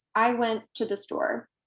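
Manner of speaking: normal talking voice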